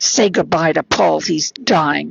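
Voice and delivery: imitated speech through gritted, clenched teeth. Retelling what she said in the hospital room: imitating speaking through gritted teeth. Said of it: "through gritted teeth".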